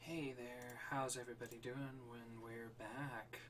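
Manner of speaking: hushed, very soft, soothing radio announcer voice. Welcoming everybody back to the stream: soothing radio announcer voice. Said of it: "like a soothing voice".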